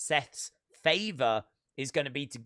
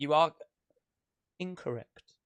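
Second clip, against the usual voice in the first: put-on, exaggerated British accent; 2 semitones higher than usual. Answering a request to say it more British: British accent. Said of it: "Can you say it more like British?".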